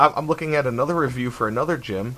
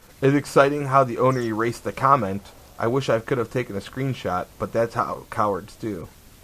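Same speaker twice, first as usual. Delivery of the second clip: ordinary talk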